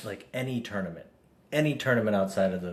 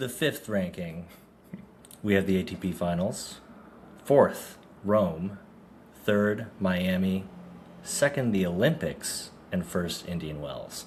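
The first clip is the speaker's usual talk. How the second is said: energetic big-event announcer voice. Asked by the other speaker to read the ranking list in an announcer voice. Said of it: "do it in your announcer voice".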